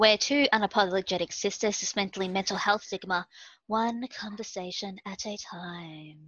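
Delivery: sultry host voice, drawn-out words. Sisters opening their mental health podcast intro, in a sultry podcast voice. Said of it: "you still liking that sultry podcast voice?".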